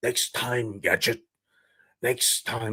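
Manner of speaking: bad put-on cartoon villain voice, soft and hushed. Recalling a show loved as a kid, do a bad Inspector Gadget villain impression. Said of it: "That's a bad impression".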